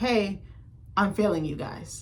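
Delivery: normal talking voice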